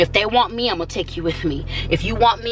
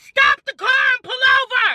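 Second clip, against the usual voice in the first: put-on very high, drawn-out yell; 4 dB louder than usual. Retelling a demand to the driver: retelling a yell. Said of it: "I just yelled at".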